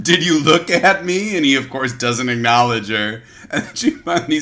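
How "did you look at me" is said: sudden, high-pitched screaming voice. Telling a story about a queen and a guard, retelling a scream. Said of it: "she screams at him".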